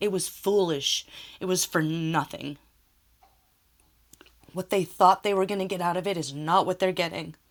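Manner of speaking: choked up, words catching in the throat. Speaker talking to listeners, called y'all, getting choked up. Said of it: "I got choked up a little bit".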